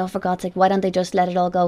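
normal talking voice

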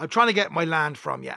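plain

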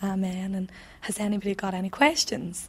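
ordinary talk

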